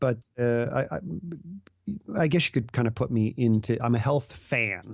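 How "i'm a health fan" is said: HEALTH stressed, slow pace. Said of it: "Maybe not the fanatic".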